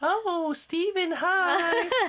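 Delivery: put-on very high-pitched, cutesy girly streamer voice. Mocking how pretty streamers greet viewers, the speaker imitates a girl streamer. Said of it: "I'm trying to be sound like a girl".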